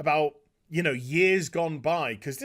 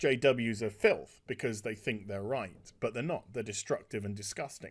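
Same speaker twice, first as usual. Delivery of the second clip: plain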